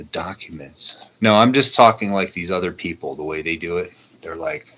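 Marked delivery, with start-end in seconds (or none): 0.0-1.0 hushed, soft, secretive half-whisper. Mocking people who hype an upcoming document release, in a mock half-whisper. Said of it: "Why am I whispering here?".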